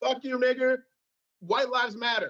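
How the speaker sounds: hollering from a crowd. Retelling what the crowd in front yells: imitating a crowd yelling. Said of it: "are yelling".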